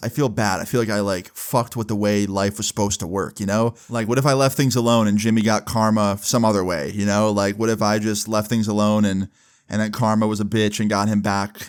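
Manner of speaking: plain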